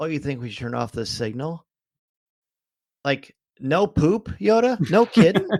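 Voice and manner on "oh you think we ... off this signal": surprised, astonished, revelatory delivery. Retelling a movie line that frustrates the speaker: imitating Yoda acting surprised. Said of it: "he says it, like, in a surprise".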